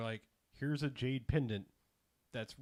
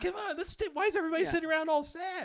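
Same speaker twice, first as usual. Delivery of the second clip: put-on wild overexcitement, higher and louder; 6 dB louder than usual. Retelling a scene, voicing character number five: imitating an overexcited character. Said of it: "who's way too alive with, uh, all kinds of excitement".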